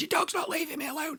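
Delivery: high, mock banshee screech. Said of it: "you're screaming like a banshee".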